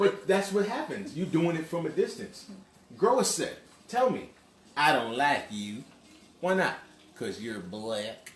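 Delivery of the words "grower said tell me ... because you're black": fake Texan accent, pitched much lower. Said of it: "Nobody talks like that".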